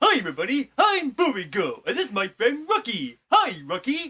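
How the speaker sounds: very high, sing-song, swooping cartoon character voice. Asked by the others to show a cartoon impression: cartoon impression voice. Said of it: "I do very good at cartoon impressions".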